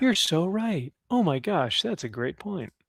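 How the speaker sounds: effusive, fawning, touchy-feely gushing tone. Imitating how Chat would reply: touchy-feely Chat voice. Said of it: "Chat would just be, like, all touchy-feely".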